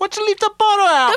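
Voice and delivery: put-on very high, loud, heavy New York accent. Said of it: "she was going".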